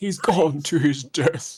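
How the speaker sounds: put-on old man character voice. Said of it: "I love that voice".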